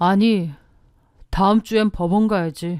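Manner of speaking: chilling, icy, low, cold delivery. Reading a story where a husband confronts his cheating wife: low cold voice. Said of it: "나지막이 차가운 목소리로 말했죠".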